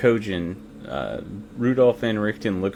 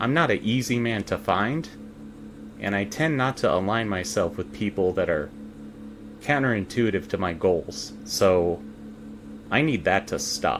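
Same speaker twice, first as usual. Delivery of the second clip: ordinary talk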